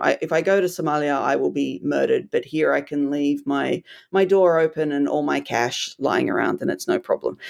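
ordinary delivery

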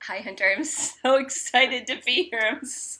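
talking through laughter. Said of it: "why we're laughing".

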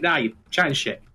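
ordinary delivery

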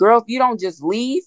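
urgent, high-pitched shouting. Retelling yelling at women in Lifetime movies on screen: retelling a scream. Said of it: "I'm screaming like".

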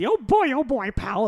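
squeaked high and drawn out. Describing a YouTube poll of his voices, the speaker does the Mickey Mouse voice. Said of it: "I do the Mickey voice".

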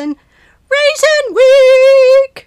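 very loud, slow, booming announcer delivery, "Week" stretched out. Announcing that the first week of May is Raisin Week: Oprah voice. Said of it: "I tried to sound like Oprah".

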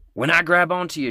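yelling in a character voice. Voicing a character in a storm, shouting over the wind: character yelling over a storm. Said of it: "she's yelling".

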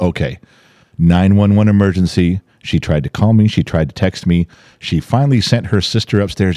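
usual speaking voice

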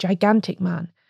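ordinary delivery

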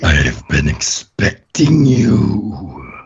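several layered voices speaking at once. A game master voices a different presence speaking from a father's figure, multiple voices at once. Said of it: "That was like multiple voices at once".

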